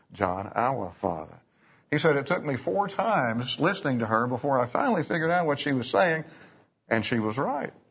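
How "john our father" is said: put-on southern American accent, repeated. Retelling how a woman prayed, as a man described her, in a southern accent. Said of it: "that southern accent".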